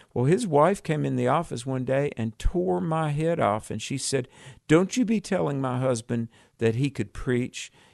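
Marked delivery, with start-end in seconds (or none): none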